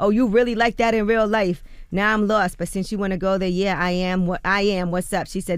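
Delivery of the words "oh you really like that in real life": loud, aggressive, confrontational, in-your-face outburst. Retelling a confrontation with a woman following the speaker, imitating a woman getting loud. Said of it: "in her New York voice".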